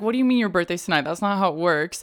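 ordinary delivery

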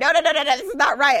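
firm, strong, insistent, disagreeing tone. Retelling a phone argument, imitating the other speaker's protest. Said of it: "I'm paraphrasing you".

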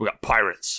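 put-on spoken with an English accent. Retelling a movie scene where Jake spots pirates: Jake's English accent. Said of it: "he says it in an English accent".

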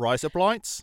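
Australian vowels making "razor blades" sound "rise up lights". Practicing the trick phrase for doing an Australian accent. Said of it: "whenever I want to do an Australian accent".

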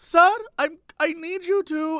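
put-on slow, high German accent. Retelling an older lady walking up to a man at the scanner, German accent. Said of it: "older lady who's sort of has a German accent".

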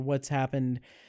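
ordinary delivery

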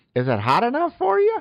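very high, nerdy put-on voice. Showing how a line could be delivered, in a put-on nerdy voice. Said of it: "I'll do a nerdy voice".

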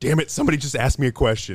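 acted fired-up, fed-up, loud, high antsy outburst. Picturing a coach late at a press conference, imitating an antsy Tom Allen. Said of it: "So he was getting a little bit antsy".

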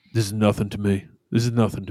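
flat, deep, low droning monotone. Acting out what a man says after being dared, deep low monotone impression. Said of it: "he's got that great monotone voice".

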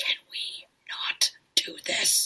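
whispered very slowly and drawn out. Recounting a man who went silent in a room, then imitating his whisper. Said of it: "And he just whispered".

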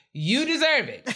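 voice shooting up high and loud. Giving a friend a congratulatory shout-out, doing a J J Harrison voice. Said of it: "in my best J J Harrison voice".

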